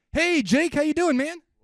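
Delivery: over-the-top eager, very loud, very high, overexcited. Teaching cold calling, demonstrating a call to a listener, as an overly excited cold caller. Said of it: "when we are calling them overly excited".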